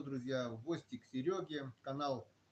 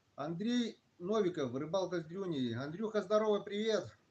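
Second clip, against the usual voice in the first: speaking up, raised, louder projecting voice; 4 semitones higher, 3 dB louder than usual. Unable to fix the phone's sound, the speaker greets Andrey, speaking louder. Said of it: "Буду говорить просто погромче".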